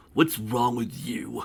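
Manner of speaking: growled, beastly dragon voice. Narrator reads the dragon's line in the story, growling dragon voice. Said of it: "Growled the dragon".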